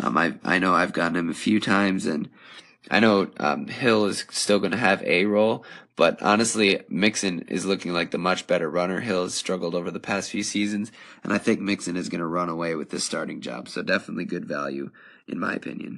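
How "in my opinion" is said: soft, failing voice giving out. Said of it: "my voice is kinda deteriorating".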